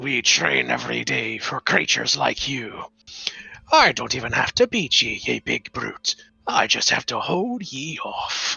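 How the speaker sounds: very low, rough, gruff growl. Narrating a scene, voicing a character who faces the demon: gruff voice. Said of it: "says in a gruff uh, voice".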